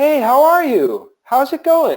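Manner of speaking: very high, drawn-out, overjoyed voice. Advice on saying hello to someone new, like greeting a long-lost best friend. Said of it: "say hello to them as if they're your long lost best friend".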